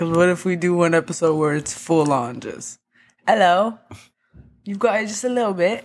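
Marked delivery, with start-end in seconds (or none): 3.3-5.8 put-on, mocking British accent. Urging another speaker to try one, demonstrating a British accent. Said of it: "do you know how to do a British accent".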